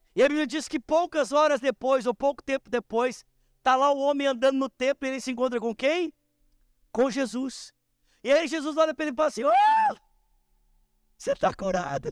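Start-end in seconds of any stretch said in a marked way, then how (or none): 9.5-12.1 put-on, very high, swooping sarcastic sing-song. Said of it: "meio sarcástico".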